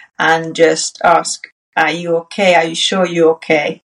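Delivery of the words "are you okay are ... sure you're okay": ordinary delivery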